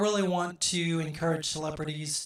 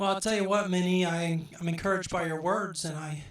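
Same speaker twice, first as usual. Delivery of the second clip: ordinary talk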